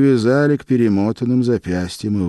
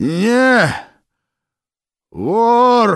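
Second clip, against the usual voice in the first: very high, gasping croak, "Не" drawn out; 12 semitones higher than usual. Kolychev, being tortured with a noose on his neck, cries out; gasping in pain, croaking. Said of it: "задыхаясь от боли, хрипел Колчев".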